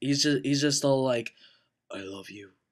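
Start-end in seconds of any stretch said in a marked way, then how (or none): 1.9-2.5 hushed, deep, low and dead-serious. Mocking how Edward says everything: mock-serious Edward voice. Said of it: "the most, like, serious thing he's ever said".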